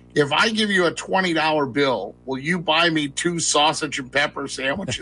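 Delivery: ordinary delivery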